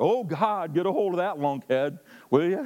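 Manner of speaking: high, hollered, yelled delivery. Speaker leading a church in prayer, mock yelling a prayer. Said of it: "I don't think we need to yell out".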